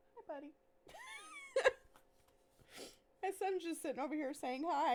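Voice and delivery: choking back tears, fast and swooping. Greeting a friend while the speaker's son says hi, trying not to cry. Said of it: "I'm trying not to fucking cry".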